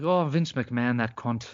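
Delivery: put-on Irish brogue accent. Quoting the channel's hosts and their swearing: Irish brogue. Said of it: "talking in, like, an Irish brogue".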